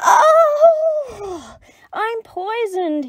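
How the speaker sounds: very high, stretched-out, drawn-out wail. The clever Dingo, after a big slurp of the stew, howled. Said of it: "he howled".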